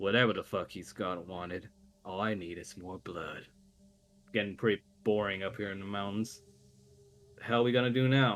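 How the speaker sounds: crass, coarse deep voice. Game master voicing another unseen voice the players hear, crass, deep voice. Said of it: "sounding more crass and deep".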